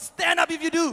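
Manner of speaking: mock preacher's pulpit-style proclaiming call. Retelling the pastor calling out to everyone listening, in a loud voice. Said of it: "And then with a loud voice".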